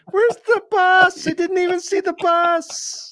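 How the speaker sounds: loud, high-pitched yell. Speaker chatting with another person slips into a George from Seinfeld voice.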